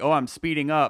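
ordinary talk

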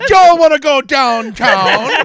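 shrill, high, loud, booming Jamaican accent. Joking around with friends, the speaker shows off a Jamaican accent. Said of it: "This is my Jamaican accent".

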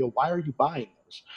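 plain

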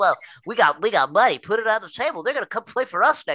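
mock fan impression. Speaker imitating fans of a terrible NFL team, mocking fan voice. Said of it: "I love when you do that voice".

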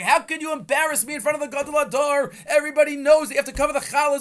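shrill, way-up, very high, loud scolding scream. Retelling a story where a man screams at his wife: imitating a man screaming. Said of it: "he starts screaming at his wife".

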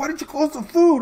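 very high-pitched, loud yell. Recounting yelling at someone after a rat turned up: retelling own yell. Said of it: "I'm over there yelling at Emily".

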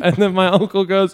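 ordinary talk, nothing marked

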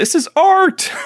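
very high, shrill, theatrical yell. Describing a performer booed off stage, the speaker retells how he yells.

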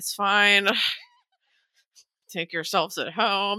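mock strained polite voice, clenched teeth, slow. Retelling a dream where a host stayed polite while irritated: imitating forced politeness through gritted teeth. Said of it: "kinda gritting his teeth".

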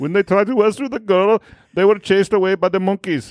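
put-on Indian accent. Reading a news report aloud to co-hosts, attempted Indian accent. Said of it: "That is a respectful attempt at an Indian accent".

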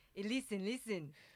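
put-on feigned Singaporean accent. Imitating a friend's Singaporean accent for the others: imitating Siv's Singaporean accent. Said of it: "Siv's best, um, Singaporean".

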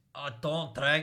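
very loud, booming put-on Scottish accent. Retelling an anecdote and reworking a quote, the speaker tries a scottish accent. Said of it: "that's Scottish".

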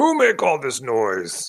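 very loud, booming, swooping ogre yell. Game master voices an ogre arriving at the players' noise: loud ogre voice. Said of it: "a loud voice says".

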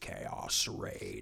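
eerie stillness, spooky, still, breathy whisper. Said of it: "the most spooky still voice possible".

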